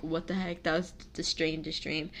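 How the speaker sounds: ordinary delivery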